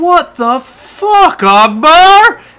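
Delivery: shrill, booming, very loud, high, drawn-out scream. In a role-play scene, a carnie comes over to akbar, shouting. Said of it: "one of them in particular just starts shouting".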